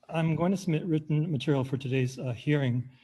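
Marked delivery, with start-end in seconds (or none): none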